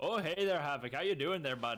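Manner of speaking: loud, put-on Canadian accent. Trying a greeting again after being told they're in Canada: put-on Canadian accent. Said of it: "I gotta try that greeting again".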